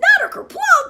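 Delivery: very high, squeaky cartoon voice. Reading Chicken Little aloud, the reader slips into a Mickey Mouse voice. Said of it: "That's Mickey Mouse's voice".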